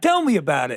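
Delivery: put-on quirky, odd, weird New York accent. Retelling a movie scene where Terry asks about his first time: weird New York accent as Terry. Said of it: "her weird New York accent".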